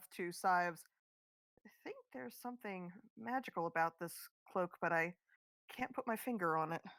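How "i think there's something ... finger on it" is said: hushed, muttered under the breath. Player voicing Nyx, speaking to Sives while Rudy sneaks away: under her breath. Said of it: "says under her breath".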